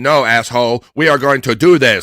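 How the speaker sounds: very loud, grumpy, snippy robot voice. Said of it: "he did like a shitty kind of uh, bitchy robot voice".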